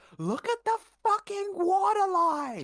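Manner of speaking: very high, very loud, shrill, swooping scream. Voicing Theron calling down from the mast: screaming. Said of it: "Theron just screams".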